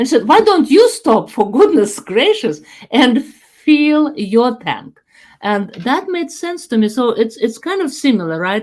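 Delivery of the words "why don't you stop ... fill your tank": acted outraged, despairing, exasperated scolding tone. Retelling what a woman said to the speaker, mock-exasperated scolding. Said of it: "in this kind of tone of voice that she was so devastated with my stupidity".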